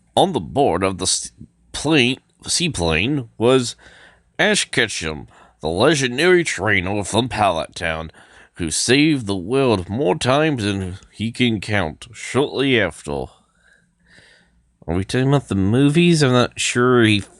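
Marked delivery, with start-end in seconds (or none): 0.2-12.1 put-on voice-over narration style voice. Speaker narrates the opening of the next region: narrator voice. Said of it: "I have to do a narrator voice".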